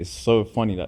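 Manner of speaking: ordinary talk, nothing marked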